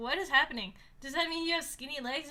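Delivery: ordinary talk, nothing marked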